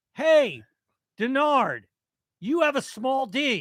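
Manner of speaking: very high, very slow, drawn-out yell. Retelling heckling a ballplayer from behind the dugout: retelling a yell. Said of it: "I yelled".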